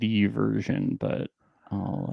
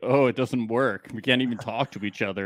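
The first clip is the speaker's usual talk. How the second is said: ordinary talk, nothing marked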